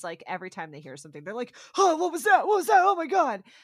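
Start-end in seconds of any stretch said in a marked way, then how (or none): 1.8-3.4 high, loud, panicked yelps. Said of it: "They start freaking out".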